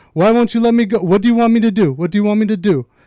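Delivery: put-on demanding Persian-accented voice. Retelling a rich mother yelling at them over moving cars, in a put-on Persian accent. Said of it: "the accent you put on".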